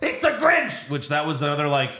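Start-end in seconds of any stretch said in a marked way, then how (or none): 0.0-0.9 mock yell, pitched way up, very high and shrill. Recapping a movie scene, the speaker retells the elf's yell. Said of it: "the elf yells".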